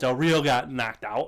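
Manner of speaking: ordinary talk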